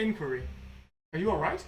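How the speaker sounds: machine-like robot voice. Voicing a bot that checks on the players after a crash: robot voice. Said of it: "we're tormenting these bots".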